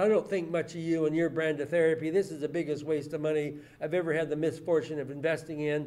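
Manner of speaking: ordinary talk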